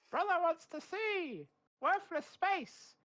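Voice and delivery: very high-pitched talking-crow voice. Playing a crow that speaks, squawking a message. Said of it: "I've decided I'm a crow now".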